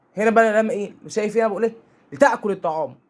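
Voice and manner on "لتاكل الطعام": agitated, angry, bossy, commanding tone. Showing the tone of someone ordering another to eat, angry tone. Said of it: "هنا نبره صوتي واحد متعصب".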